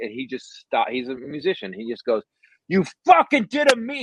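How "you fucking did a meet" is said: put-on shrill shriek, very high-pitched and loud. Retelling a musician screaming at him on the phone, retelling a scream. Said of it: "Just screaming at me on the phone".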